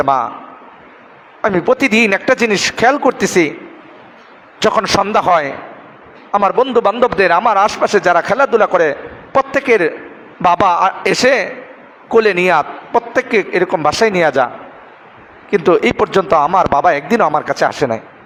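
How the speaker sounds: normal talking voice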